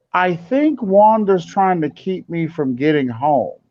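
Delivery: plain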